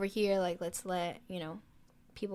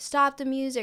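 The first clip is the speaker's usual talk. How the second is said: acted shout, pitched higher and slower; 6 semitones higher, 4 dB louder than usual. Describing a concert where people yelled for help, retelling a crowd's shout. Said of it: "or shouting something".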